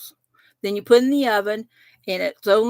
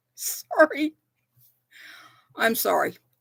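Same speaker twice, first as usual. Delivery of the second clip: words broken up by laughter; 4 dB quieter than usual. Apologizing after a chair wire pokes the leg, laughing while talking. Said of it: "I'm laughing because".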